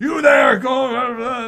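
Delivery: shrill, high, loud barking with stretched "go". Narrating the master's reaction to the attack, barking orders. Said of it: "starts barking out orders".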